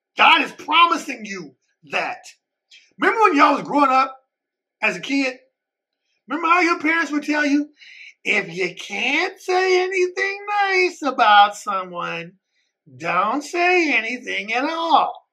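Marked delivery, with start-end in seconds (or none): 8.2-15.1 very slow, patronizing, condescending talking-down tone. Quoting what parents tell kids, in a put-on condescending voice. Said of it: "using that condescending voice".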